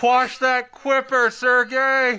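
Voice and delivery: shrill, very loud, high-pitched shouted yell. Yelling in character to an ally across the water: yelling across at an ally. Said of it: "I'm gonna yell at, uh, Sergei".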